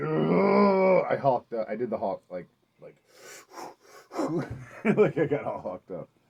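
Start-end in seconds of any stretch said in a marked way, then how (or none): 0.0-1.0 high, loud, intimidating war cry. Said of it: "and I said".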